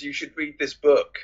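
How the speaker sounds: dead level, flat monotone, zero enthusiasm. Retelling what a character said: imitating a monotonous delivery. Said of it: "In the most monotonous way".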